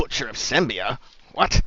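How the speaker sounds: low mutter under the breath. Voicing a one-eyed guy who overhears a name: muttering under his breath. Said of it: "mutter under his breath".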